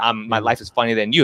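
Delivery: ordinary talk, nothing marked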